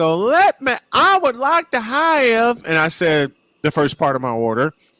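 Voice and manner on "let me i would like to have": fake Southern drawl, pitched way up, words stretched. Retelling ordering lunch at a drive-thru: put-on southern accent. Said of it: "So I go Southern voice".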